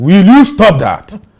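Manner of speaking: booming, very loud, high roar. Retelling roaring back from the kitchen: retelling own roar. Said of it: "I roared".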